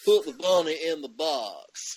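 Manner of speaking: put-on loud Cajun accent with box drawn out. Reviewers discussing a movie's accents quote a line in Taylor Kitsch's Cajun accent. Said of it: "he should have a Cajun accent".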